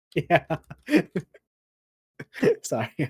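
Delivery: high voice, laughing through words. Looking up a movie poster online, laughing while talking. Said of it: "I can't stop laughing at it".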